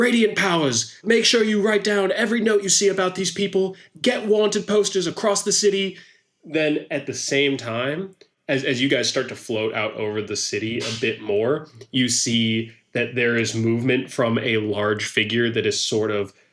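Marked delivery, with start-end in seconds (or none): 0.0-6.0 shrill, very high shrieking. A game master voices figures running toward the players and screaming: screaming. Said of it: "are screaming like".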